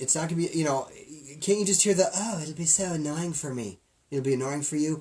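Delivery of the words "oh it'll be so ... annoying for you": put-on British accent played for laughs. Imitating someone who complains about the place: British accent. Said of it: "Nice British accent".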